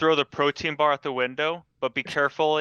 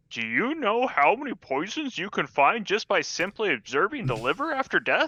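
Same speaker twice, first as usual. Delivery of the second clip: teasing, mocking old grandpa voice, pitched up; 5 semitones higher than usual. Teasing a friend who takes a while to do things, mimicking him in mocking tone. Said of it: "In a mocking tone".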